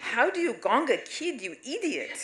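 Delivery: put-on heavy Romanian accent, very high-pitched. Imitating the speaker's mother cursing at the tv, in a heavy romanian accent. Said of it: "with her heavy Romanian accent".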